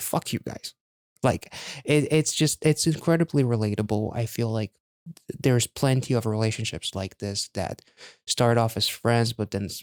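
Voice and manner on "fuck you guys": hushed, whispered grumble under the breath, barely audible. Retelling passing a kissing couple while walking the dog: imitating muttering under breath. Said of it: "under my breath".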